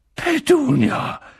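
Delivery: gasped out, very high and breathless. Narrator reading Uncle Vernon gasping out Petunia's name, gasping. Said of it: "stieß er keuchend hervor".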